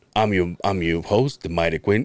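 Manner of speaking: very deep, low show-host voice. Retelling Quinn's podcast intro: imitating Quinn. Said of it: "And then he's like".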